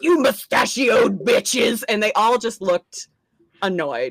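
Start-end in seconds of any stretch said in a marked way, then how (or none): 0.0-1.8 put-on drunk man voice, screaming. Retelling a drunk man yelling at cops: imitating a drunk man screaming. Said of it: "he is still just".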